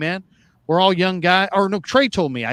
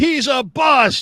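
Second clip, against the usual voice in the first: mock shouting, higher pitch; 6 semitones higher, 4 dB louder than usual. Retelling what people shout about a player: imitating people shouting. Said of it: "shouting at the top of their lungs".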